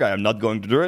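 put-on frog puppet voice. Joking about a driver refusing to pit: Kermit the Frog voice. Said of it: "I am Kermit the Frog".

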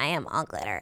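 hushed, very soft character voice. Quoting what she said about glitter: imitating Crystal's voice. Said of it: "I haven't heard you do that voice in so long".

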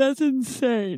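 talking mid-yawn, words stretched by yawning. Reacting to a story about a private jet company: yawning while talking. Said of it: "I was yawning just then".

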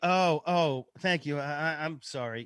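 put-on half-hearted delivery. Retelling returning a lost card to a woman, the speaker quotes her reply: imitating half-hearted thanks. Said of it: "gave me a half-hearted".

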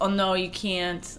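put-on Chinese accent, slow, slightly broken English. Retelling the lady's reply to a request to bring something in, put-on Chinese broken-English accent. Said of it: "and this is in a broken English a little bit".

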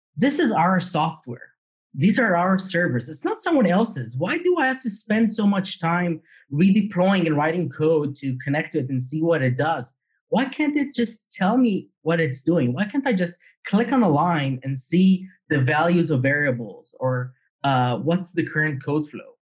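ordinary talk, nothing marked

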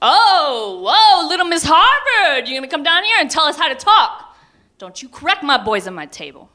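very high, booming put-on dad rant, drawn-out oh. Retelling a dad interrupting a lecture at the breakfast table: imitating father's booming voice. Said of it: "in that booming voice of my childhood".

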